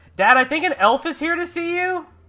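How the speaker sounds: very high, very loud yell. Voicing a young boy calling his dad from the door: yelling down the hall. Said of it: "you hear him yell down the hall".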